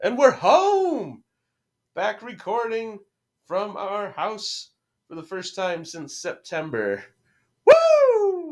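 very high, thrilled, swooping sing-song excitement. Podcast host greeting listeners at the start of an episode, excited. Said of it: "You sound excited".

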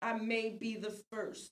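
ordinary talk, nothing marked

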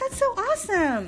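motherly voice, pitched very high. Retelling a parent's reaction to a child's school project, in mom voice. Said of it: "That's my mom voice".

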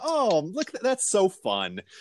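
condescending, sing-song, drawn-out fake enthusiasm. Retelling how teachers praised hip hop: imitating condescending praise. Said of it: "in this condescending, like".

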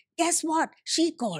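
gloating, victorious, triumphant tone. Retelling what he said when he called three days later, retelling a triumphant announcement. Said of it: "very triumphantly".

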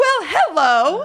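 very high, loud, slow, prim formal adult voice. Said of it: "really weird formal place".

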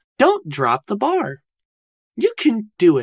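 slightly sarcastic, high, slow text-to-speech machine voice. Mid-set, the speaker voices their own thoughts in a TikTok narration voice. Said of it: "narration voice".

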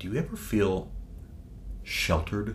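mock deliberate, pitying, condescending, soft and slow. Retelling a question someone asked them, imitating someone asking deliberately. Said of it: "they said the word very deliberately".

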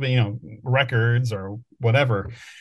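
ordinary talk

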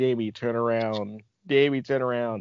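ordinary delivery

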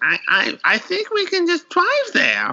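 drawn-out, very high, sing-song cartoon voice. Retelling a woman's words while recounting a story, cartoon character voice. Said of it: "she sounds like a cartoon character when I do it".

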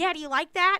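squeaky, loud, super high-pitched come-on voice. Retelling what a guy said in bed: imitating a super high voice. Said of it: "his voice was super high".

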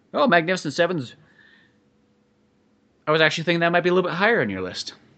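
genuinely let-down voice. Reacting to the other speaker's number eleven pick: disappointed. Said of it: "you sound legitimately disappointed".

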